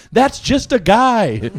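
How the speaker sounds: slow, high, drawn-out hollering yell. Retelling what a friend yelled when an announcer came out: imitating Aaron yelling. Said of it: "Aaron yells, he goes".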